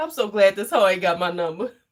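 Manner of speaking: usual speaking voice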